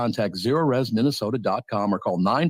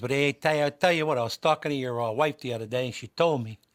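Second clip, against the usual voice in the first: put-on Italian accent, chatty way of talking; 3 semitones higher, 4 dB quieter than usual. Showing how an italian friend talks, imitating a friend's italian accent. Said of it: "I love that accent".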